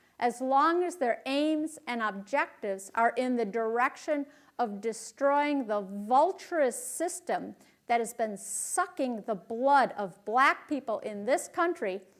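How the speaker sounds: ordinary talk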